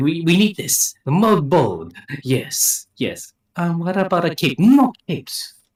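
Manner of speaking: high, loud, swooping, drawn-out delivery. Imagining a character's reaction to concept art: Edna Mode voice. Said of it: "She's like".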